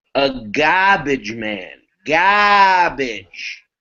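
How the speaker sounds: put-on very slow, broad Boston accent, garbage stretched out. Imitating how the character Nick kept saying it: Nick's broad New England accent. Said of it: "a very broad New England accent".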